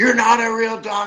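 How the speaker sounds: very high scream. Retelling how people at a meeting shouted at the psychology doctors, retelling screaming. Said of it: "They all started screaming".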